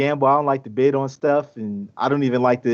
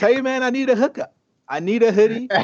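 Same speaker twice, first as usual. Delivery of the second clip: very high, pitched-up, pleading, begging voice; 10 semitones higher than usual. Begging for a free hoodie in a Steven Jackson impersonation. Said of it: "my best Steven Jackson impersonation and do my begging segment".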